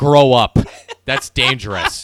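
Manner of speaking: booming, high, slow, drawn-out yell. Acting out what he would have yelled at her over the sparkler: retelling a yell. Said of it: "and just yelled".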